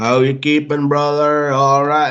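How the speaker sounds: put-on half Geordie, half Canadian blended accent. Imitating the voice messages he sends every day, in a half Newcastle, half Canadian accent. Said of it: "in his stupid fucking half Newcastle, half Canadian accent".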